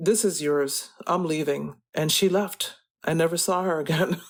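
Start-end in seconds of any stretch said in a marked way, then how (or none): none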